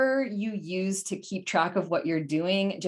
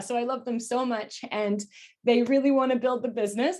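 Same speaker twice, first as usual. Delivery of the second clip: speaking through tears, tearful, voice breaking; 4 semitones higher than usual. Speaker thanking the ladies who helped build the business, crying while speaking. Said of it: "I can't stop crying".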